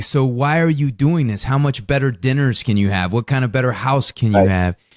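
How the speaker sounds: ordinary talk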